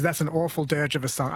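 normal talking voice

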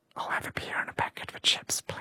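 acted-out whispering. Speaker tells a joke, acting out their apology to a librarian, retelling a whisper.

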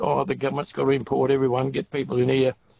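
usual speaking voice

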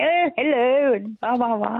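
well-mannered telephone voice. Recalling how her mother answered the phone, imitating mother's posh voice. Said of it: "put on her very best posh voice".

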